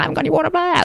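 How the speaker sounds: high-pitched, panicky, freaked-out mock wail.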